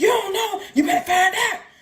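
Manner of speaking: very high, loud, barking shout. Retelling intake at prison, staff yelling a question: imitating a guard yelling. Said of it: "everything is just yelling".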